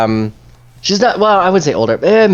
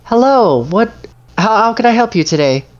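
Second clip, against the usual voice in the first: put-on sweet, high-pitched older woman voice; 9 semitones higher than usual. Voicing a shopkeeper greeting customers at the door: sweet middle-aged shopkeeper lady. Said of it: "she has a very sweet demeanor about her".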